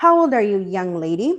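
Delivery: put-on very serious, grave tone. Retelling the supervisor asking the young girl her age; retelling a very serious tone. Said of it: "with a very serious tone".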